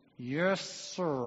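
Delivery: mock speaking through clenched teeth. Retelling the story of Esther, the speaker voices the reply to the king: acting out gritted-teeth reply. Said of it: "I could imagine Haman through gritted teeth".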